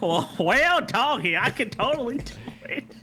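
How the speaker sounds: very slow, high, drawn-out fake country drawl. Joking after being told not to fake an accent: put-on country accent. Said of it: "Why are you trying to be from my hometown?".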